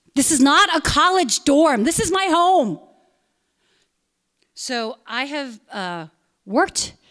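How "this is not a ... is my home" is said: mock fed-up, high, angry, frustrated yell. Recounting a man cursing at her outside her home, retelling a frustrated yell. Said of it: "I just yelled".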